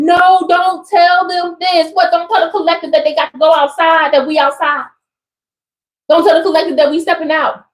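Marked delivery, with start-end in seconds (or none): 0.0-1.9 put-on, stretched-out, protesting screaming cry. Speaker acting out what the losers are screaming, imitating people screaming. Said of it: "these losers screaming like".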